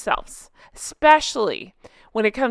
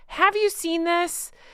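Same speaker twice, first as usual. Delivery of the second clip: full-on, high-pitched screaming; 9 semitones higher than usual. Asking viewers about a post after giving shout-outs: screaming. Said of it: "I'm going to scream".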